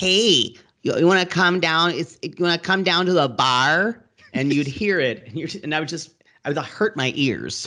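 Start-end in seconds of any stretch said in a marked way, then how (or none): 0.0-4.0 put-on upper Midwestern accent. Recalling people heard during college in Michigan, imitating Upper Midwest accent. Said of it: "people from Western Michigan next to Minnesota".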